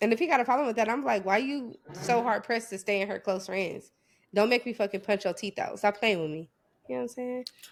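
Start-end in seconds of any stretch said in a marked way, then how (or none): none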